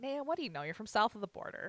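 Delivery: playful needling tone. Speaker retells teasing someone during a Simpsons episode, retelling a teasing jab. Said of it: "i was just teasing her".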